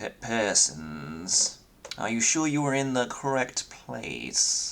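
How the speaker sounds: sniffy, disdainful elf voice. Voicing an elf receptionist who looks the players over: sniffy, disdainful elf receptionist. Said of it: "sort of looks you over and down before he sniffs and says".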